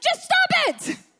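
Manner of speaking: mock shrill yell, very high and loud. Retelling a clip where a man yells at another man, retelling a yell. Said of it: "And he literally yells at him".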